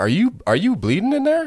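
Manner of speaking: mock very high, swooping yell, rising. Retelling a moment of calling out to her through the door: retelling a yell. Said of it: "I yelled at her".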